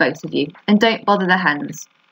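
plain reading voice

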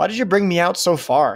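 taunting, sneering tone. Cole answers the man who has just given him instructions: mocking. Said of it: "he asked mockingly".

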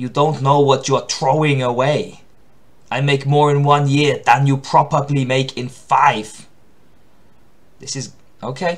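loud tough guy character voice.

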